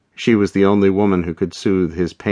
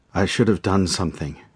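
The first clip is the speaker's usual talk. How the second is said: hoarse, rasping voice; 4 dB quieter than usual. Miguel, his head in her arms, speaks up, hoarse. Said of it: "he said hoarsely".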